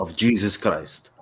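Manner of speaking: fake, put-on Russian accent. Joking after asking if anyone has one: put-on Russian accent. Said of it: "nobody got a Russian accent?".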